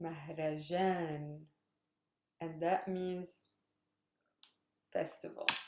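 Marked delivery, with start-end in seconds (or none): 0.0-1.4 Mahrajan with the weight on the syllable jan. Explaining Arabic word stress with Mahrajan: stress on 'jan' in Mahrajan. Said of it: "I stress the last syllable, jan".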